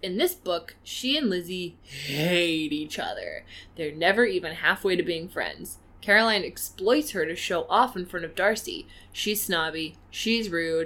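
ordinary talk

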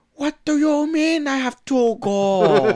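put-on slow, drawn-out, accented kid voice. Imitating a movie kid's dubbed voice: Jean-Claude Van Damme doing a kid voice. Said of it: "it just sounds like him like".

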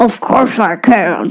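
extremely low, very deep put-on bass voice. A child asked on a show to do a low voice answers, very deep put-on voice. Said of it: "That sounds like a world record low voice".

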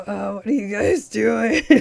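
forced gruff would-be hero growl. Recapping a show, mocking a waif of a gentleman's mock attempt at Batman voice. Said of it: "he was trying to do a Batman voice".

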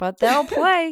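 plain reading voice

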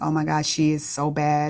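usual speaking voice

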